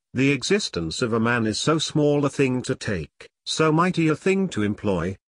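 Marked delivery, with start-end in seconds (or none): none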